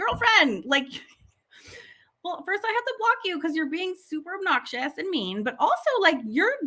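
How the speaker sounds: high-pitched speech broken by hard laughter. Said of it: "laughing so hard 'cause I'm like".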